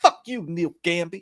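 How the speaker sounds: super prissy, tossed off. Describing a scene from a show, imitating Walton Goggins. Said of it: "that's how he talks and shit".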